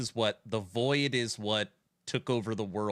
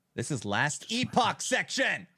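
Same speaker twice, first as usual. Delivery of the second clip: full-on high yell with swooping pitch; 7 semitones higher than usual. Steering the talk back to the current game: yelling. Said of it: "Sorry for yelling".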